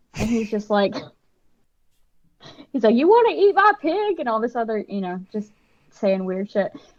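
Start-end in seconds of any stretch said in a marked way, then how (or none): 2.9-4.2 very high-pitched creepy backwoods man voice. Retelling what a man in the scene said to her, imitating a Deliverance-esque man. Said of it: "very like Texas Chainsaw Deliverance esque".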